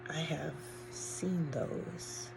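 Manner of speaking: tiny, faint, very small voice, soft and slow. Speaker retelling the mother's words after she collapsed on the couch, very small voice. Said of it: "in a very small voice".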